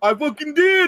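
put-on boastful bragging. Retelling what a man answered about shooting someone, mock-proud bragging. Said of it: "he's like all proud of himself. And he's like bragging".

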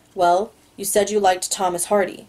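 ordinary delivery

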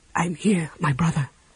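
steady, calm, comforting, reassuring soft whisper. Raceland reassures his brother Caramon during a fight, calm, reassuring whisper. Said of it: "Raceland said calmly".

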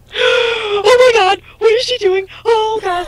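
high, loud, panicked shrieking.

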